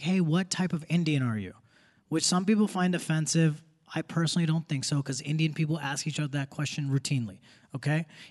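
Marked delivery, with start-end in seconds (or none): none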